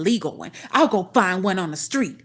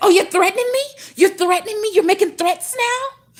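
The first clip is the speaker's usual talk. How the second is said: very high-pitched, shrill, raised woman's voice; 13 semitones higher, 6 dB louder than usual. Mocking the woman who took a dare as a threat: imitating Nika. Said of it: "That bitch".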